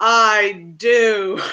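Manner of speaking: loud booming voice. In a game, a character uses prestidigitation to answer a gatekeeper: booming voice. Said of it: "keeps her voice booming".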